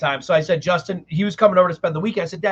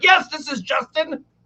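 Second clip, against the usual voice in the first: mock yelling, pitched-up screaming voice; 9 semitones higher than usual. Retelling hearing dad from upstairs, imitating dad screaming. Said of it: "I hear my dad screaming like".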